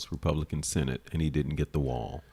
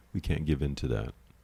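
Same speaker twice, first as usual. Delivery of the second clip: normal talking voice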